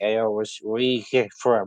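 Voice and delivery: put-on drunk man voice. Retelling a man who came up to them out of nowhere: retelling a drunk voice. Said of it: "in a very uh, drunk voice".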